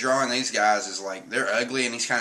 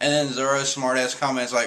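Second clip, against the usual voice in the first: ordinary talk, nothing marked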